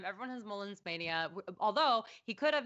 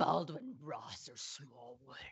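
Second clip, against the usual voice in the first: demon voice, much lower and slower; 7 semitones lower, 4 dB quieter than usual. Asked to read the next quiz question in that voice, demonic voice. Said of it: "the demons are talking".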